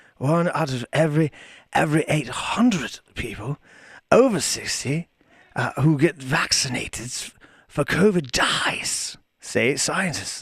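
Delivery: put-on lazy, drunken British accent. Reading a news line aloud as a joke: lazy drunken UK accent. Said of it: "you can do the really lazy U K".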